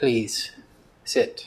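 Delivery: very soft, almost gentle, whispered voice. A narrator voices a figure gesturing the group to sit, very soft, almost gentle. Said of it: "His voice is very soft, almost gentle".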